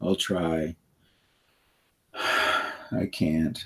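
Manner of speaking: very slow, slumped, almost whispered, with no energy. Showing how defeated words sound when spoken: low energy, almost a whisper. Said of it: "low energy, almost a whisper".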